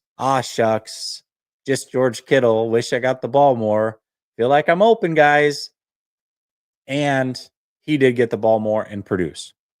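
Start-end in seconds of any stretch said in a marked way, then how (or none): none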